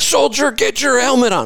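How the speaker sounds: mock very high, shrill screaming. Speaker retells an officer behind them at a stop sign, retelling an officer's scream. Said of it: "I hear somebody screaming behind me".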